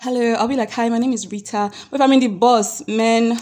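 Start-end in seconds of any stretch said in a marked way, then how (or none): 0.7-1.7 posh, proper, classy and polite voice. Showing how the voice changes on entering a classy place: classy polite voice. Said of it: "The way your voice will change".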